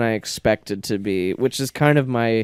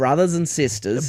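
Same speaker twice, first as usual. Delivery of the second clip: put-on Australian accent impression; 4 semitones higher than usual. Retelling how she came in with an Australian accent, the speaker tries it. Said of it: "You got to hit me with it".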